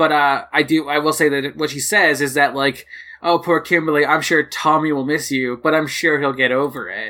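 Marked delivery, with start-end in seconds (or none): none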